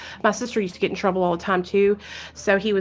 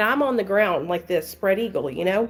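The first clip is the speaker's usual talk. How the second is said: ordinary talk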